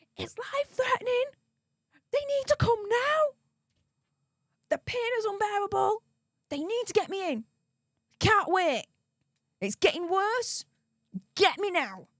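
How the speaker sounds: very high-pitched screaming through pain. Speaker retells calling for an ambulance, retelling screaming in pain. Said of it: "the only way that I can talk is by screaming".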